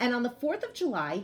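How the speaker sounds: plain reading voice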